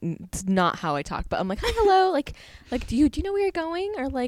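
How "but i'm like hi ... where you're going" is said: put-on much higher, faster customer service voice, baby-like. Speaker demonstrates the voice used with customers: customer service voice. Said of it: "I consider my customer service voice my baby voice".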